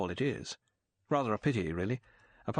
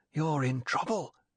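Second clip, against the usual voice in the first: urgent whisper, higher pitch; 3 semitones higher than usual. Ruby speaks to Bond after he follows her into his bathroom, whispered urgently. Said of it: "she whispered urgently".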